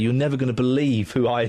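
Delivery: plain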